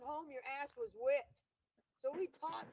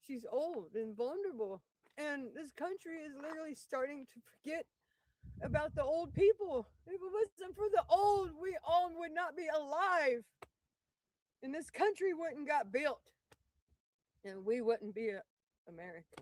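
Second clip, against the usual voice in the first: tearful, raised voice, crying through words; 6 dB louder than usual. Speaking about old people being forgotten, crying while talking. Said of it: "I'm crying because I feel for this woman".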